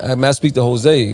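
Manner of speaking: plain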